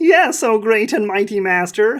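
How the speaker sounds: squeaky, squeaking little goblin voice. Narrator voicing a cowering goblin slave answering its master: squeaky goblin voice. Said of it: "she squeaks".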